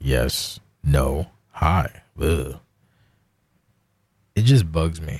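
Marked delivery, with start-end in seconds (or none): 0.0-2.6 low, terse, code-switched voice. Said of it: "When I have to code switch, I just talk real slow and talk way less".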